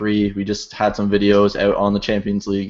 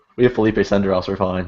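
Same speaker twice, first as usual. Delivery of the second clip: normal talking voice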